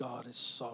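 reverent voice, very deep, soft and hushed. Imitating how people say this phrase, in a put-on religious voice. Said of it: "people put on their religious voice".

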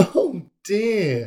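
with a laugh. Mum reacts as Tilly's piece lands on a big snake, laughing. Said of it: "Mum laughed".

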